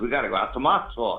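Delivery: ordinary talk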